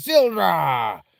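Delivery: put-on pirate voice. Reading game dialogue aloud as a character: pirate voice. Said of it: "she sounds like a pirate".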